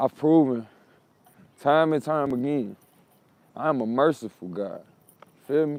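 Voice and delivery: slightly cracking, breaking voice. Reflecting on situations they had to overcome: voice a little cracky. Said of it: "my voice got a little bit cracky right there".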